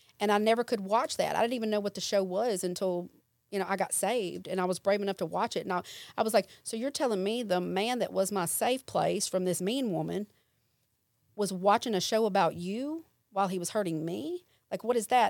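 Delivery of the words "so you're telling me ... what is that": ordinary delivery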